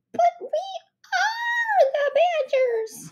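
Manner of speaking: very high, squeaky voice, sounding puzzled. Narrator reading a badger's reply to Stinkbomb and Ketchup Face, high squeaky puzzled voice. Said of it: "with a high squeaky voice, said in a puzzled tone".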